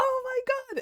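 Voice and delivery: mock, very high yelled outburst. Recounting watching the show with friends, the speaker re-enacts their own yelling. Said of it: "And I was yelling".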